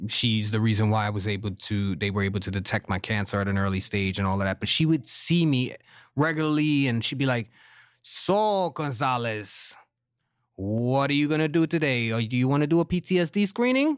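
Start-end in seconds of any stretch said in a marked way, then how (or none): 8.1-14.0 put-on Eastern European accent, slower. Retelling how his doctor questioned him at checkups, in an Eastern European accent. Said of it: "That's a good impression".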